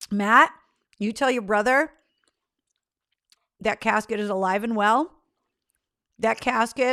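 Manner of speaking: munching while speaking, mouth full. Speaker answers a listener's question, talking while chewing. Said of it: "sorry, I'm munching in your ear".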